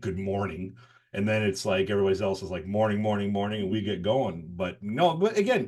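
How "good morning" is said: scornful delivery with open disdain. Showing one's habitual morning greeting to everybody, disdainful. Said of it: "I say it with like disdain".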